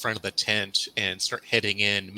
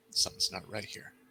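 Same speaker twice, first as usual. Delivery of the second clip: muttered quietly under breath, quieter; 8 dB quieter than usual. Voicing Ben as he looks to Trudy, said under his breath. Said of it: "he's gonna say just under his breath".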